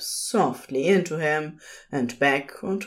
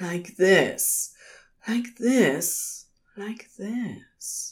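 sweet murmur, breath catching, much slower; 4 semitones higher than usual. Reading a character's line during a sex scene, sweet murmur, breath catching. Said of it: "Aziraphale murmurs sweetly, breath catching".

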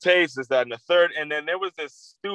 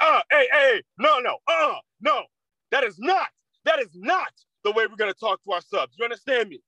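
dead-serious, high-pitched scolding tone; 8 semitones higher than usual. Retelling how the teacher Miss Donahue scolded a student: imitating Miss Donahue scolding. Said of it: "the way I just said it is exactly the way Miss Donahue sounded".

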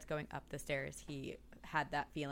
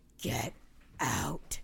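deep, guttural, rasping, rough demonic growl; 5 semitones lower, 3 dB louder than usual. Retelling how the speaker's sleeping sister spoke as someone stepped in, deep guttural voice. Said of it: "in a deep, guttural voice says".

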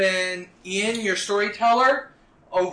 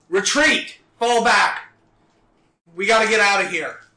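full, loud shout; 4 dB louder than usual. Narrating a game scene, the speaker voices a character calling out, shouting. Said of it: "And then you hear George shout".

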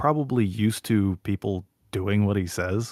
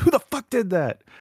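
put-on furious man voice, much higher; 13 semitones higher, 4 dB louder than usual. Retelling how a man came storming out, imitating a furious man. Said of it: "comes storming out".

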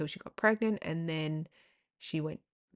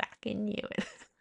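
high, put-on, broad Australian bogan voice; 5 semitones higher, 4 dB quieter than usual. Repeating own earlier reaction while laughing about it: put-on bogan voice.

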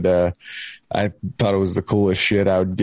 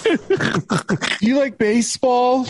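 put-on very high six-year-old child voice. Retelling a kid heard on the CB radio, speaker uses a little kid voice. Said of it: "like a little kid voice".

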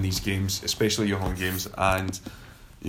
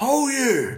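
put-on Glaswegian accent, shouting, higher pitch; 4 dB louder than usual. Retelling a shout from the crowd at a football ground: imitating a Glaswegian football fan shouting. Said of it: "the old, like, Glaswegian boy".

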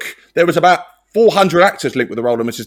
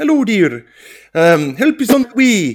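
put-on Scottish accent, much higher pitch; 3 semitones higher than usual. Imitating Jack made up as a middle-aged woman, in a questionable Scottish accent. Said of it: "You're not the only one who likes an impression".

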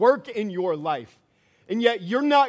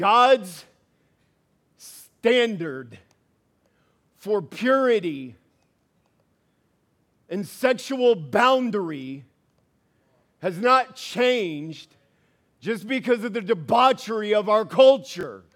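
much slower, deliberate pace. Speaker addressing the young men and ladies in the Royal Heirs room over a delay, speaking slowly. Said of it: "so I'm going to say this slowly".

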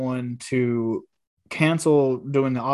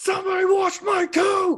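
mock furious shouting, very high-pitched. Retelling a cartoon scene about cleaning a coat: imitating Tommy yelling. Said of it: "he just yelling, like, so mad".

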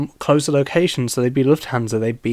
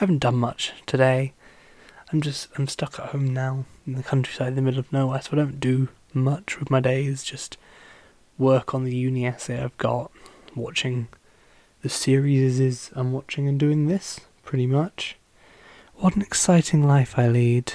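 soft, gentle ASMR voice; 5 dB quieter than usual. Podcast host talking casually to listeners: soft gentle ASMR voice. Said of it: "abandon the ASMR gentle voice and go to normal voice".

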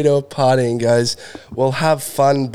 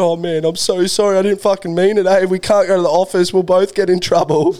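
put-on crying while talking, higher pitch; 6 semitones higher than usual. Retelling following a kid after a fight at school, imitating own crying apology. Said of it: "crying all through".

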